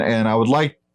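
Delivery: plain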